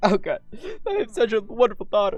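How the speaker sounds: tearful, choking up, voice breaking, pitched high. A dad tells his daughter how proud he is, choking up with tears. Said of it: "don't cry".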